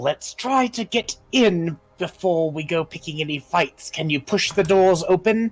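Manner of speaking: hissing stage whisper. Game master voicing a character to her companion, in a hissed stage whisper. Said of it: "kind of hiss at him in a stage whisper".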